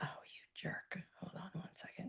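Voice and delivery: soft, non-breathy whisper.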